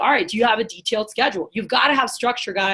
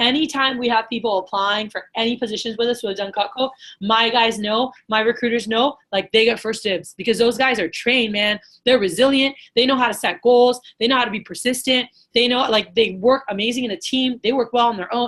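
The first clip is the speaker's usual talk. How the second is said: ordinary talk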